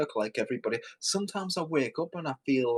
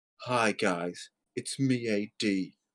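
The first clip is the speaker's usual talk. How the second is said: put-on glum, gloomy voice; 4 semitones lower than usual. Mocking a video-maker who compares himself to a beheading victim, imitating AD's glum voice. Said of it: "with my glum voice".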